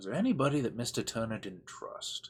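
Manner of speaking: very quiet, hushed, secretive conspiratorial voice. A tabletop player, leaning in, questions a character: conspiratorial tone. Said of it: "in a really sort of conspiratorial tone".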